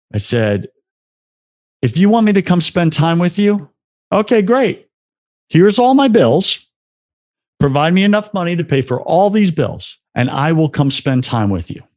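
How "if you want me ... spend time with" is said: acted haughty, arrogant voice, pitched up. Retelling a prayer offering God a deal: imitating own arrogant prayer. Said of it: "this was my most arrogant prayer".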